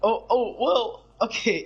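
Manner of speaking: voice breaking mid-phrase, cracking and drawn out. A gamer talking to viewers about games, voice cracking. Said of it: "ignore that voice crack".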